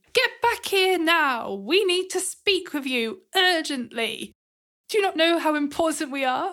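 urgent, mildly commanding call. A player's character shouts across a river toward a departing airship: magically amplified shout. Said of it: "cast thermaturgy on my voice".

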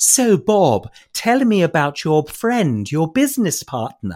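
put-on slow, very proper, upper-class English accent. Quoting how a French woman spoke English, posh English accent. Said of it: "she spoke English in a much posher accent than you or I would ever use ... That's how she spoke".

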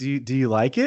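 ordinary delivery

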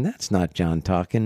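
ordinary delivery

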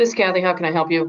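flat tone without a smile. Speaker demonstrating a phone greeting, unsmiling greeting. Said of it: "doesn't have a smile on the face".

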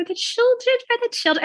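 creepy voice, pitched way up high. Imitating how a politician says a line in a video: creepy Nancy Pelosi imitation. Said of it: "she says it really creepily".

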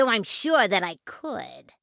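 sneering, scornful tone. Narrator reads a rat turning down a request for help, sneering. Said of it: "sneered the rat".

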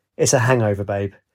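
plain

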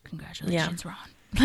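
put-on, acted muttering under breath. Speaker recounting a scene, acting out her line: under her breath. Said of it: "Like under her breath".

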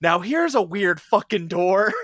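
blurted-out, very loud, high shout. Talking about a game, quoting Carlos at one of the doors, retelling Carlos shouting. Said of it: "Carlos just shouts out".

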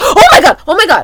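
screaming. Speaker about to catch a train suddenly remembers something, screaming. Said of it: "I'm sorry for screaming".

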